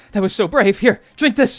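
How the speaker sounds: panicked voice. Voicing the governor feeding a potion to a wounded hero: panicking. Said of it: "'cause he's, like, panicking".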